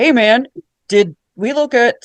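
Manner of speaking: put-on man voice. Recounting the story, quoting Nathan in his booming voice. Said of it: "Nathan has such a booming voice".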